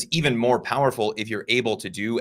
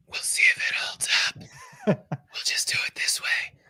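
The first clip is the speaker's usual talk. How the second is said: breathy whisper through a weak voice. Speaker with a weak voice decides to do the recap anyway: whispering. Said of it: "last time you whispered like that".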